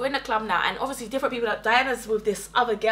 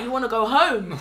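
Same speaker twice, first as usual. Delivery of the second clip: ordinary delivery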